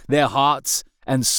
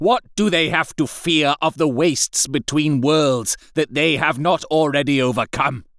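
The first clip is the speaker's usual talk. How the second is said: enraged, scornful, contemptuous fury; 3 semitones higher than usual. An angry lord lists his armies' victories with contempt, demanding what his men could possibly fear; enraged, scornful. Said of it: "General [name] then did see that light of madness that was wont to enter the [name]'s eyes when he spoke of his dreams and ambitions. / he whispered to his master, / Have not my glorious armies conque".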